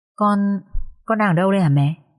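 plain

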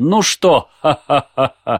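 mock gloating laughter. Telling a joke, the lion gloats at the fallen monkey: mock-gloating laugh. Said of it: "Лев злорадно смотрит на нее".

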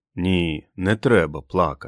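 ordinary delivery

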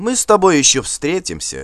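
high, swooping, pointed, exaggerated friendliness. A jarl answering a man who just mocked him; pointedly friendly. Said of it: "с видом подчеркнутого дружелюбия пожелал Асфальд".

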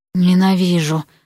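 longing, yearning whisper. Vasya answers Erik, who begs her not to leave: whispered with longing. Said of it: "прошептала Вася с тоской".

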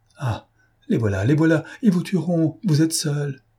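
abrupt, high, sudden cry. Dolorès, clinging to him as the door is shaken, is crying out. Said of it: "Dolorès s'écria en s'accrochant à lui".

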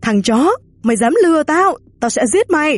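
high shout, climbing in pitch as it goes. Narrator reads an old man yelling at the narrator, shouting. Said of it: "tôi nghe tiếng ông hai hét lên".

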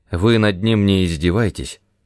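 usual speaking voice

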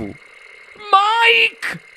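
piercing, shrill, very high shriek. Mrs. tv calls out to mike, shrieking. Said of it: "strillò la signora TV".

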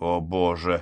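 muttering. On the phone with Harriet, Charlotte responds, muttered. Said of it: "пробормотала Шарлотта".

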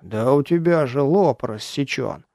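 ordinary delivery

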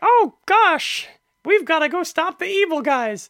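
very high, loud voice, played dead serious. Joking about a crossover game, imitating super serious Mickey Mouse. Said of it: "watching Mickey be super serious".

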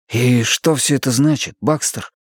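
hushed whisper. A young man speaks to a sobbing woman amid a crowd, whispered. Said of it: "прошептал молодой человек".

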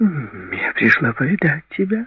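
very high, slow, playful, teasing lilt. A woman answers a busy man who asked what she wants; playful. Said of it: "игриво произнесла она".

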